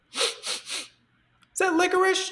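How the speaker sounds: very high, muffled voice. Retelling what a woman said lying face down in the face cradle, muffled voice. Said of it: "her muffled voice".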